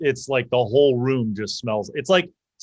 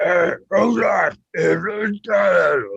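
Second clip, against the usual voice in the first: throaty, guttural giant voice, words dragged very slowly; 7 semitones higher, 3 dB louder than usual. The game's narrator voices unseen speakers the players hear on the stairs, guttural giant voice. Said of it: "these guttural voices".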